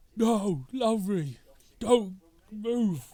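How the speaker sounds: loud high shout. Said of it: "he's gonna shout".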